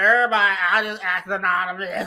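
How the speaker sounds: mock slurring, drunk-sounding voice. Retelling what someone said after being skipped for critique: imitating Lemon slurring. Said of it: "he slurred".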